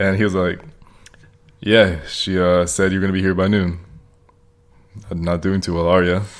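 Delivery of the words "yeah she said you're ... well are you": put-on flat, deadpan, monotone voice. Retelling how a deadpan man greeted a visitor, imitating a deadpan monotone. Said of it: "he's just so monotone".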